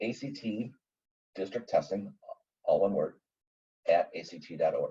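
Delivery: slow, soft, deliberate letter-by-letter spelling. Speaker giving listeners an email address for their questions, speaking slowly. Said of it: "I'll say this slowly".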